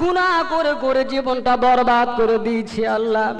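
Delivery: tearful, pleading voice.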